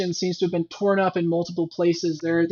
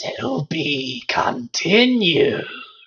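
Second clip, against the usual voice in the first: awful gurgling voice, higher pitch; 5 semitones higher, 3 dB louder than usual. Game master voices a voice rising from the inky blackness, awful gurgling voice. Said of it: "awful gurgling voice that just says".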